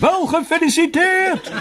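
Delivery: very high, shrill, piercing shout. The narrator shouts through a speaking horn into an old man's ear. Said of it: "schreeuwde in zijn oor".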